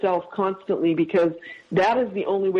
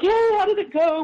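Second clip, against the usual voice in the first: mock very high, bright, optimistic, upbeat tone; 12 semitones higher than usual. Retelling a woman calling to ask how it went, imitating an upbeat, optimistic tone. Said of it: "Really upbeat and optimistic".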